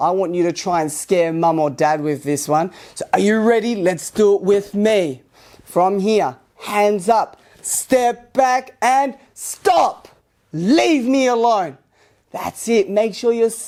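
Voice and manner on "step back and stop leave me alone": firm, steady voice, drawn out. Leading listeners to practise a phrase together to scare mum or dad: yelling as loud as possible. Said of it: "we need to yell it as loud as we can".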